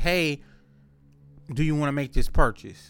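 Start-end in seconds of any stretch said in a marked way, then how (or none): none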